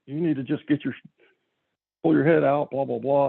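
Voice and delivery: mock yelling in a drill-instructor voice. Retelling how the instructor started yelling at the kid; retelling a drill-instructor yell. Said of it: "he starts yelling".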